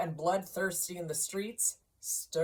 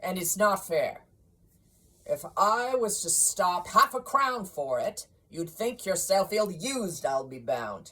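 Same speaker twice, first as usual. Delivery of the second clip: loud, curt, gruff grumbling growl; 6 dB louder than usual. A stingy employer defends his refusal to pay for a day off, with a grumbling growl. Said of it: "Also that [name] had as little of what is called fancy about him as any man in the city of London, / and [name] walked out with a growl".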